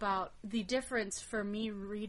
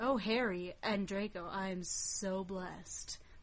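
heavy, very sardonic, mocking ironic tone; 2 semitones lower than usual. Speaker shows how they first read a character's line in the book, sardonic. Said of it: "I read that as very sardonic".

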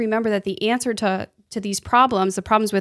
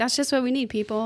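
put-on breezy, casual, offhand throwaway tone; 2 semitones higher, 5 dB quieter than usual. Retelling how the other speaker said a line: imitating a nonchalant tone. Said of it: "so nonchalantly".

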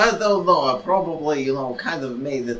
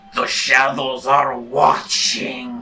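proclaimed really loudly, booming; 4 dB louder than usual. As the door starts to close, a character speaks up, really loud. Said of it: "Pilau really loudly says".

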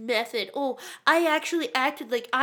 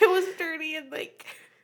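tearful crying voice, higher; 4 semitones higher than usual. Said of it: "Sam's actually crying".

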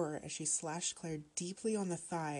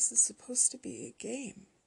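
weak, feeble, high, faint; 7 semitones higher than usual. Narrator reads his own first words under everyone's stare, feeble. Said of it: "I said feebly".

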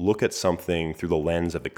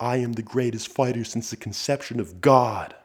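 acted, held-back, pitched-up mild yell; 6 semitones higher than usual. Retelling yelling after every workout rep: retelling own scream at top of lungs. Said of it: "I screamed at the top of my lungs".

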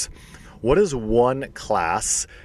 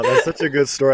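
talking through laughter, higher and louder; 4 semitones higher, 4 dB louder than usual. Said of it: "I'm laughing".

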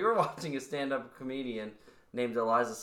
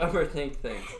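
suppressed, stifled laugh breaking through. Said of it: "She holds back her laugh so respectfully".

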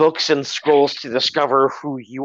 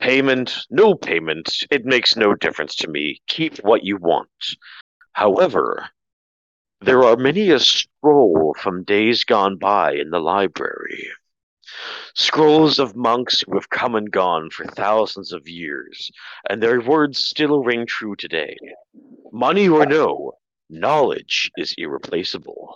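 big, deep, low dragon voice; 5 semitones lower than usual. Narrating a game, the dragon answers the players: dragon voice. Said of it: "the dragon looks at you and says".

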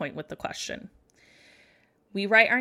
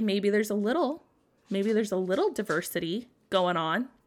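ordinary talk

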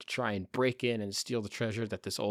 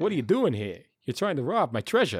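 silly vampire character voice, louder; 3 semitones higher, 6 dB louder than usual. Pitching a silly Dracula scene: Christopher Walken voice. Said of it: "talking like Christopher Walken talks".

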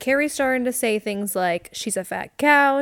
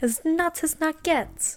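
put-on British accent, pitched up; 6 semitones higher, 4 dB quieter than usual. Joking about someone going crazy, in a British accent. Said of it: "Why did you sound like a British person?".

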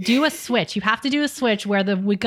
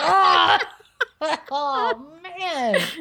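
mock scream, higher; 6 semitones higher than usual. Recounting running into a bunk bed in the dark, retelling a scream. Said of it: "So I'm screaming".

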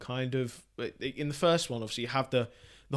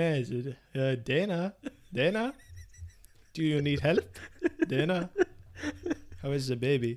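awkward, halting, slow, hesitant, stop-and-start creepy doctor voice; 3 dB quieter than usual. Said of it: "That's actually quite a good impersonation".

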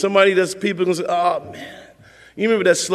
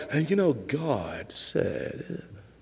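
smooth put-on preacher voice, lower, quieter, slower; 5 semitones lower, 11 dB quieter than usual. Mocking how people fall for smooth speakers, doing a smooth-speaking preacher impression. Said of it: "some smooth speaking guy like".

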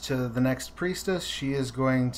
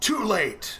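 in-character scream, high-pitched; 8 semitones higher than usual. Voicing a monster who fires an eye ray: screaming in character. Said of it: "he screams".

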